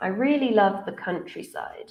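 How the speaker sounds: statement tune, pitch falling on countryside. Demonstrating statement intonation to listeners, with falling intonation. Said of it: "we use a falling intonation".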